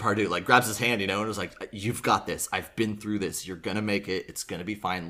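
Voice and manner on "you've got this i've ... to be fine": mock whisper, lower, much quieter. Retelling how a kid spoke up close to the teacher, retelling a whisper. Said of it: "gets real close to him and like whispers like".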